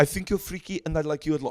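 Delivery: put-on Dutch-sounding accent. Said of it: "That was very Dutch".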